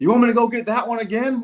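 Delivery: loud, hollered scream. Retelling a man screaming at the pitcher after the speaker's hit; retelling a scream. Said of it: "he's screaming at the pitcher".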